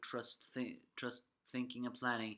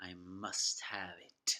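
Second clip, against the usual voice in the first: menacing villain voice, ominous, low, very slow, drawn out; 4 semitones lower than usual. Retelling the comic relief villain's line from an episode, ominous Mark Beeks voice. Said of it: "an ominous voice".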